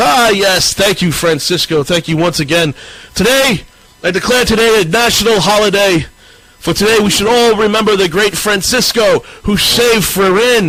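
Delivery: high voice, words broken up with laughter. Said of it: "clapping and laughs and goes".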